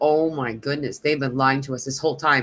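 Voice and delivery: ordinary talk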